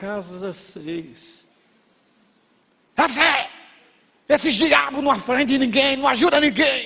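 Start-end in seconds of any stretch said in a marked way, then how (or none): 3.0-6.9 put-on high, thick Carioca accent with hissing s sounds. Quoting a lady who came out after the speaker rang repeatedly: heavy hissing rio accent. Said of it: "uma senhora sai com um sotaque carioca pesado".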